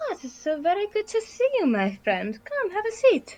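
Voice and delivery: very high character voice, wide lilting swooping swings. Running a Pathfinder game, greeting a player's character as Lady Lacrimosa voice. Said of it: "Lady Lacrimosa looks up at you and she says".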